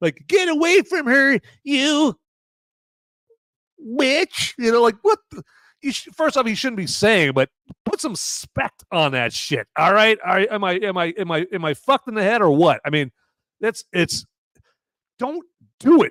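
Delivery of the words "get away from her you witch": very slow, lifeless, high, fake, synthetic-sounding delivery. Mocking how the synthetic character delivers a line: imitating Andy's crappy synthetic delivery. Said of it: "he says it like dog shit".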